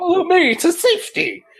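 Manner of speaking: very high, grand, heroic rallying call. Playing a character in a role-play, saying the line in a very heroic voice. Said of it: "I'm also going to say it in a very heroic voice".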